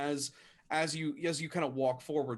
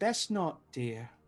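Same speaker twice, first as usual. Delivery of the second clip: put-on elderly woman voice. Narrator voicing a woman calling out to the party, older woman's voice. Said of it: "an older woman".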